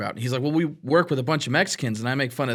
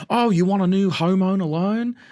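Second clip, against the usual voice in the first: put-on Australian accent, pitched higher; 6 semitones higher, 4 dB louder than usual. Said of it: "these Australian guys having a conversation".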